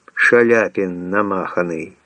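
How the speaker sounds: plain reading voice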